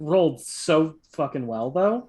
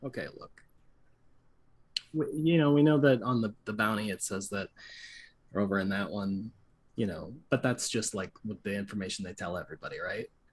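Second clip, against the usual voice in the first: secretive, conspiratorial, confiding, leaning-in tone; 6 semitones lower, 8 dB quieter than usual. Leaning in to share a secret about a bounty, in character: conspiratorial. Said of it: "I just kinda lean in conspiratorially".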